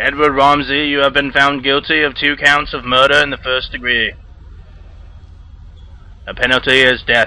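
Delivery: put-on Boston politician voice. Voicing a security guard reading a death sentence: JFK impersonation. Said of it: "my J F K impersonation of the security guard".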